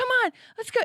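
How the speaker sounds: yelling, pitched way up very high. Retelling calling the dog away from a skunk: imitating own yelling. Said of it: "I was yelling at him".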